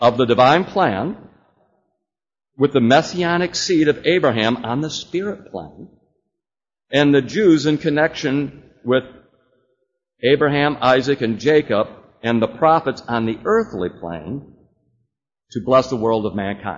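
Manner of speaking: slow, careful, deliberate word-by-word reading aloud. Speaker reads a quoted passage aloud: reading slowly. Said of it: "I'm going to read this slowly".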